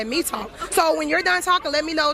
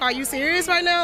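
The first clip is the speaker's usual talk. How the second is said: ordinary delivery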